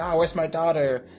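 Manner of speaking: put-on, distressed parent voice. Mocking how a worried parent should sound: mock distressed Harry. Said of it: "distressed and being like".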